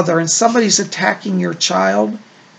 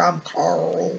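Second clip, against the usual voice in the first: put-on male country drawl; 6 dB quieter than usual. Relaying a man's voice heard around the listener, Carl's country drawl. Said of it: "he talks with kind of a country drawl".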